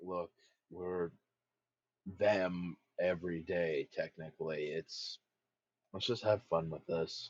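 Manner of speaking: low-key delivery. Voicing Thorsten urging the group to have fun: lowered voice as Thorsten. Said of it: "lower his voice when he's speaking".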